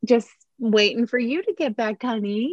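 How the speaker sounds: high, sugary, seductive put-on sweetness. Retelling a scene where Monica answers him: imitating Monica being sweet and sexy. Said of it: "she's trying to be all, like, sweet and sexy".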